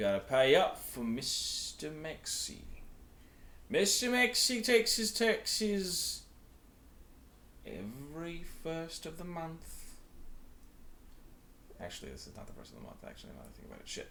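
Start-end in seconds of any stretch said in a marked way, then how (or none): 0.0-9.6 very drawn-out, slow, high, put-on Australian accent. In a role-play, a speaker voices a district character in an Australian accent. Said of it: "he's gonna go Australian".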